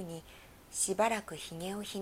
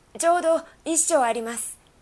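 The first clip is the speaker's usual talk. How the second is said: called out very loudly, high-pitched shout; 8 semitones higher, 13 dB louder than usual. Narrator reads the groom calling out his measurement to the wildcat: shouted. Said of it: "測って叫びました".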